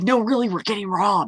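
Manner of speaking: high, hushed, breath-only stage half-whisper. Retelling a phone call from an ex during a bank robbery: imitating someone half-whispering. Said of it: "she's, like, whispering".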